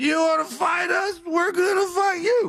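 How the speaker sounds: put-on very high-pitched, drunken, taunting tough-guy voice. Imitating the golfers trying to keep it together: imitating drunk guys. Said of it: "they are drunk and they're, like, trying to keep it together".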